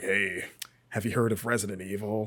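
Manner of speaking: put-on rough, smoker-like child voice. Retelling a friend's question about a game: imitating a friend's smoker voice. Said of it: "that's what he sounded like as a fifth grader, just like he had smoked a pack of cigarettes".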